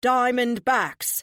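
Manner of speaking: loud, high, rallying team cheer. Reading a story aloud, a character cheering the team name: cheering. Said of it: "Domino cheers".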